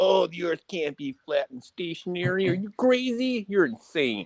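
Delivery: high, swooping, cartoonish put-on accent voice. Mocking globe believers, speaker imitates them in a cartoon-character accent. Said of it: "It sounds like a cartoon character".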